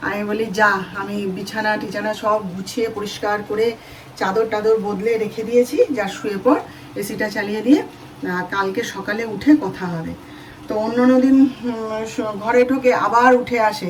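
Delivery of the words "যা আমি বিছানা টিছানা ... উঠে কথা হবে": normal talking voice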